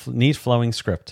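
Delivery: ordinary delivery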